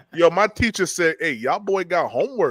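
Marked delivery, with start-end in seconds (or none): 1.2-2.6 local Charleston speech. Retelling a teacher's words after moving to Charleston: imitating a teacher's Charleston dialect. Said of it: "The teacher talk like that".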